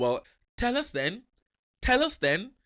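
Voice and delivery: very high, clumsy, bad put-on Geordie accent. Imitating how she might have reacted, demanding to be told: bad Geordie accent. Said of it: "that Geordie?".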